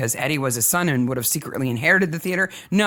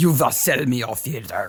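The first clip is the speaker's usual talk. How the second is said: very bad put-on Russian accent; 3 semitones lower than usual. Recapping a story's plot, the speaker voices a demand in a bad Russian accent. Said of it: "That was the worst Russian accent ever".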